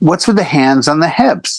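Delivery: ordinary delivery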